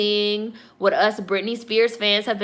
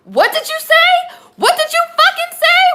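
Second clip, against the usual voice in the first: play-acted furious country accent, very high and loud; 7 dB louder than usual. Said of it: "With her fucking country ass accent".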